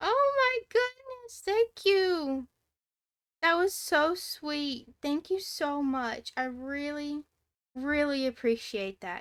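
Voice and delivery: gushing, close to crying. Streamer thanking their first viewer for kind words: on the verge of tears. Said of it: "I'm gonna cry!".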